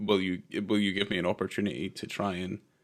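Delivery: ordinary talk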